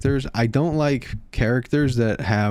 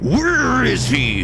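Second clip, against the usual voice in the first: put-on clenched-teeth voice, higher and louder; 12 semitones higher, 4 dB louder than usual. Retelling a scene from the show: imitating Reva's clenched-teeth delivery. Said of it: "she's like".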